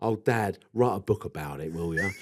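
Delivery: low-pitched, taunting, jeering tone. Retelling what the niece and nephews said to their father: imitating his niece and nephews. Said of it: "Like that".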